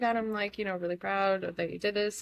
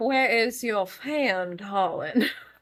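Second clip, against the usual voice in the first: over-the-top, loud, swooning Southern belle drawl; 5 dB louder than usual. Reacting to the other speaker sounding so southern: fainting-couch southern belle drawl. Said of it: "that was like my fainting couch southern".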